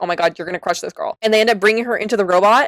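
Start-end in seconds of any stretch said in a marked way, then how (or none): 0.0-1.2 acted anxious tone, quieter. Retelling their own reaction to a tense camera shot: retelling an anxious reaction. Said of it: "genuinely gave me anxiety 'cause I was".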